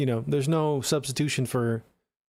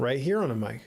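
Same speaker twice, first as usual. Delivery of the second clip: cleaner sound, a fist's distance off the mic. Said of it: "right here sounds a little cleaner".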